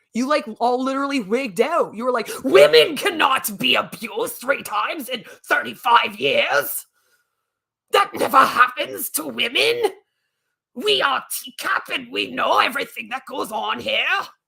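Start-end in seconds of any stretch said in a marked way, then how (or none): 2.4-14.0 bad, weak, put-on Australian accent. Speaker quoting the person they're addressing, in a bad australian accent. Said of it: "my Australian accent isn't very good".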